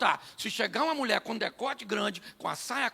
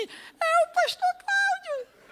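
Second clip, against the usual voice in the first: gentle, tiny, very high, slow little voice; 5 dB louder than usual. Retelling what a voice suddenly said to him, imitating a soft little voice. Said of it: "uma vozinha suave disse assim".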